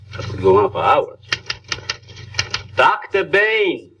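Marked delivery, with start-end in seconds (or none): 2.7-3.7 raised, high-pitched, carrying shout. Calling for his other assistant, shouting his name. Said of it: "There's no need to shout".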